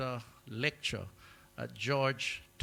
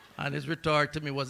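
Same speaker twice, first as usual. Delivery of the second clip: normal talking voice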